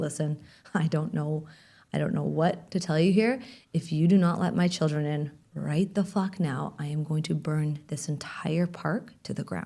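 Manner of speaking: slow, calm, level menacing tone. Retelling what the speaker said to a woman over the children crossing back; retelling saying it very calmly. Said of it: "And I said it very calmly".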